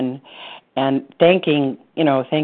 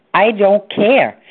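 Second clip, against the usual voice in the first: hotly angry, very angry, defiant tone; 7 semitones higher, 4 dB louder than usual. Retelling the reply to a husband who read the brochure: retelling an angry reply. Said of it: "And I said very angrily".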